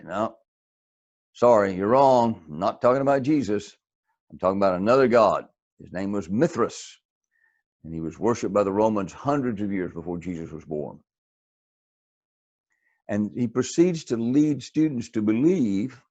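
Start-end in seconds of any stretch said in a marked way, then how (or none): none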